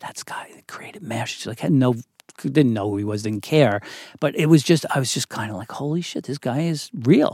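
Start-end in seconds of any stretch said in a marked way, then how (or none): 0.0-1.4 whisper, much quieter. Retelling seeing a famous writer at a show, whispering to their date. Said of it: "I'm whispering to my date".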